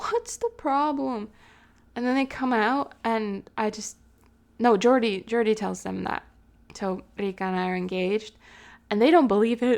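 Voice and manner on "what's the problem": playful, put-on irritated, annoyed tone. Retelling the engagement news, the speaker quotes the sister: fake annoyed yell. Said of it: "in like a fake annoyed tone".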